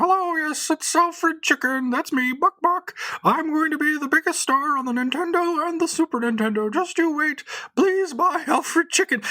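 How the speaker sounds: pitched way up in falsetto. Retelling a toll-free ad recording the speaker called; Alfred Chicken falsetto voice. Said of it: "some guy doing a falsetto voice".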